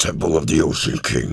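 deliberately altered voice. Announcing the temple's name in a changed voice: deliberately altered voice. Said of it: "using my ability to alter my voice".

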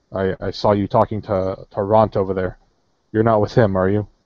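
usual speaking voice

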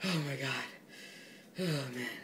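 out of breath from laughing. Making a funny sound for viewers, out of breath from laughing. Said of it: "I can't breathe now".

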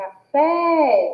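café called out loud, as if far off, fé stretched. Explaining the stressed syllable of a word: café called out, 'fé' stretched. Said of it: "chamar a palavra como se a gente estivesse falando com alguém que está longe de nós".

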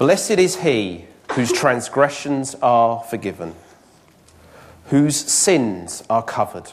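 slow, deliberate reading-aloud delivery.

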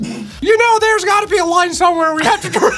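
very high-pitched, lecturing voice. Arguing back at the other character in a comedy bit, Tails voice. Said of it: "Like, Tails is like".

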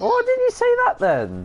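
put-on outraged shout.

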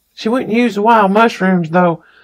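ordinary delivery, nothing marked

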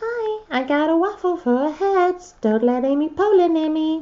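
very high, creepy, unsettling put-on character voice. Voicing the rare Sweet Treats character, in Susie Sundae voice. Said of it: "I'm probably not going to do that voice ever again because that was just creepy".

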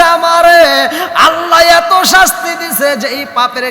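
loud, high anguished shout.

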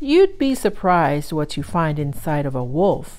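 usual speaking voice

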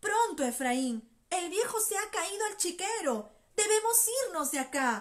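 urgent, hurried cry. Enrique, rushing to his brother Efraín, exclaiming, rushing. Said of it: "exclamó Enrique precipitándose a su hermano".

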